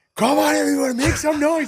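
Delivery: excited high-pitched shouting. Speaker recalling calling out to a crowd on a mic, retelling shouting into a mic. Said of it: "I'm shouting into the mic so it's like loud".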